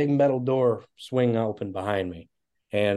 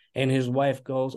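ordinary delivery

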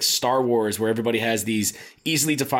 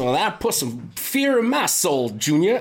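bad army villain voice with swooping pitch; 5 semitones higher than usual. Describing the bad army guy in Avatar, imitating the bad army guy's voice. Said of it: "he talks like this and he says".

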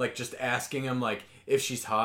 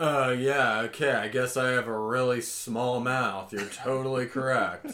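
put-on, sarcastic, grudging, passive-aggressive, drawn-out "yeah". Retelling a man's reply to a woman's flirtatious remark: mock passive-aggressive. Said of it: "he goes real passive aggressive".

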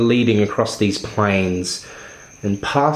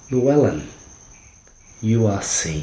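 voice like a rustling chime. Voicing one of a group that nods to llewellyn, in a high rustling chime voice. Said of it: "one voice that sounds kind of high-toned, and has kind of a... kind of almost like a rustling chime to it".

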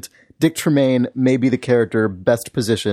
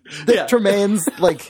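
plain

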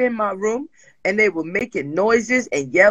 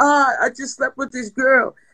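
fake crying in a higher pitch; 3 semitones higher than usual. Retelling how a partner called crying with a confession: imitating someone crying. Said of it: "And and while she's crying".

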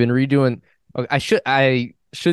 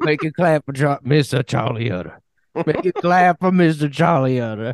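put-on New Orleans accent, higher; 4 semitones higher than usual. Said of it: "they give him, like, a New Orleans accent?".

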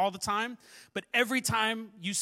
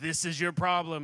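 put-on, much lower, deep, divine-sounding voice; 3 semitones lower than usual. Speaker imagines the Lord speaking to him as a man, deep echoing God voice. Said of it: "speak with his deep voice with all the reverb".

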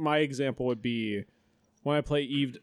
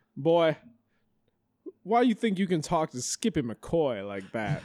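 put-on rural country-guy voice; 4 semitones higher than usual. Retelling what a stranger said back to her group, imitating a country dude. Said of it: "who is this country dude?".

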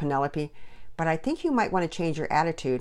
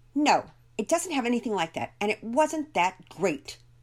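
irritated, crabby, cross tone, pitched up; 6 semitones higher than usual. Narrating Penelope answering Pearson's questions about the other family: cross. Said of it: "Penelope answered crossly".

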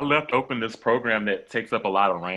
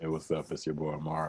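late-night radio voice, lower, much quieter; 4 semitones lower, 9 dB quieter than usual. Co-host introducing themselves on the group chat show, late-night radio voice. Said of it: "it sounded like you were on some late night radio show".

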